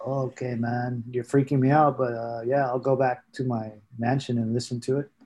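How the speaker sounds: normal talking voice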